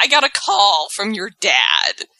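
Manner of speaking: pained, hurting voice, heavy with physical pain. Retelling what Daniel Bryan said to Shane: imitating Daniel Bryan's pained voice. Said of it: "You could hear the pain, like, the physical pain in his voice".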